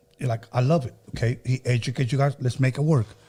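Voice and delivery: normal talking voice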